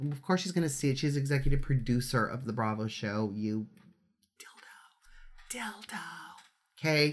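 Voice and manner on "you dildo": very quiet whisper under the breath. Recording the audio blog finale, saying a swear word aside: whispering a swear word. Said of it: "but I'm whispering them".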